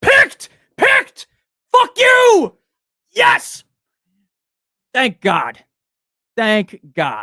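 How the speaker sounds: very loud, high, swooping full-throated yell. Reacting live to a pick coming through, yelling. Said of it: "Sorry for yelling".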